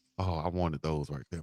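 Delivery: soft, very quiet, wistful voice, barely above a breath. Remembering shoes a friend had and wanting them: soft wistful voice. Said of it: "Why your voice get soft when you said that?".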